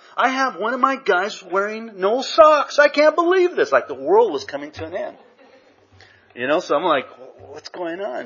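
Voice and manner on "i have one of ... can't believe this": very high, shrill, loud, despairing screaming outburst. Retelling what a man yelled on seeing him without socks, retelling a scream. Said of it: "He screams it out".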